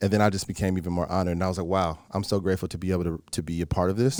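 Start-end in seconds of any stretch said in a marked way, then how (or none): none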